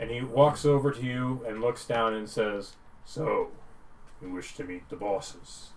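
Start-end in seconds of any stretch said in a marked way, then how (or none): 3.0-5.7 big minotaur voice, hushed and breathy whisper. Narrating a game scene, a minotaur walks over and addresses you; bulky minotaur voice. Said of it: "bulky minotaur stands up with a perfect physique, / who usually wanders up last because he spends a good portion of the day making sure he's clean, ... bulky minotaur stands up with a perfect physique".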